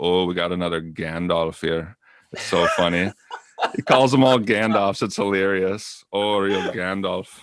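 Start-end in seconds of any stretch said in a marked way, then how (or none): 0.0-2.0 put-on sarcastic tone. Describing a streamer's reaction to certain opponents, quoting him: mimicking a sarcastic streamer. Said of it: "he's kind of sarcastic and funny".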